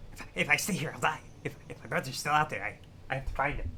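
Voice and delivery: put-on goblin character voice. Reading a game's lines aloud in a goblin voice. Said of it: "I'm doing a goblin voice".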